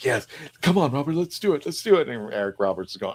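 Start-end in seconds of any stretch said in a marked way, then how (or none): 0.0-2.1 mock eager, high, excited, all-fired-up voice. Retell Paul McGann being told to fight Eric Roberts, imitating an excited Paul McGann. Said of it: "and Paul was all excited".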